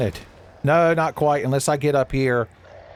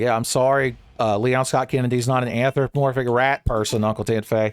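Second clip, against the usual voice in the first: ordinary delivery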